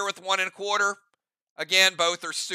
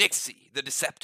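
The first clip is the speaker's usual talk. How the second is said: said with an air of mystery; 5 semitones lower, 6 dB quieter than usual. Showing how to say a cool nickname: said mysteriously. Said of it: "You gotta say it, like, mysteriously".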